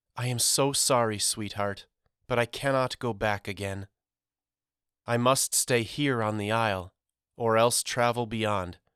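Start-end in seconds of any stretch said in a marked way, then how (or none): none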